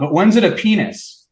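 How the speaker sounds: high, blurted, yelled call-out. Retelling a class talk on Freud and symbolism: retelling Dave yelling out. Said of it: "Dave yells out".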